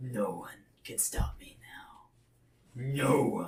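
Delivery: low, deep, husky monster voice. Telling a story, voicing the character after he transforms, in a deep husky voice. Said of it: "he says in a deep husk voice".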